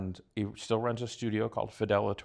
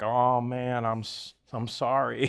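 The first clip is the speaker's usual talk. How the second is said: put-on very slow, drawling North Carolina accent. Retelling what a musician said after a show: imitating a north carolina accent. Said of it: "in his, like, North Carolina accent".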